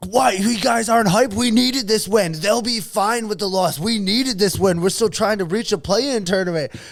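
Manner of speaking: put-on upset rant. Retelling how a fan lectured people walking out after the game, mock-upset rant. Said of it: "he got so upset".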